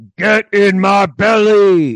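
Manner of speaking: booming, slow, loud delivery. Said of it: "in fat bastard's voice".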